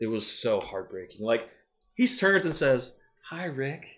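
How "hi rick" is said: calm, soft, high-pitched Southern voice. Retelling a TV scene where Herschel greets Rick: calm Southern voice. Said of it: "in that calm Southern voice".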